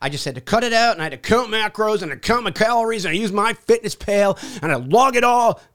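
put-on frazzled, stressed voice. Acting out a strict calorie-counting plan, in a mock-stressed voice. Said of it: "You can hear the flexion in my voice".

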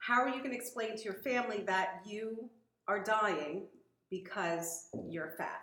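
ordinary talk

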